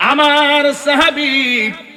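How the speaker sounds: high, loud, anguished wailing cry.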